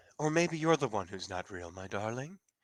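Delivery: put-on British English accent. Answering someone who insists they aren't real, British accent. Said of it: "he's got his British accent".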